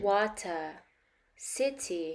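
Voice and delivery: British accent, full t sounded in water and city. Contrasting British and American pronunciation for learners, the speaker says it with British pronunciation. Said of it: "British pronunciation".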